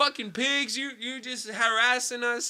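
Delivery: loud yell pitched high.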